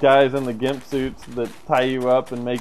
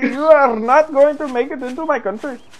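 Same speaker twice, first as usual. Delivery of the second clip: loud, very high-pitched put-on Indian accent; 13 semitones higher, 6 dB louder than usual. Recalling their Papers, Please playthrough, speaking in an Indian accent. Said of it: "here I am with like an Indian accent".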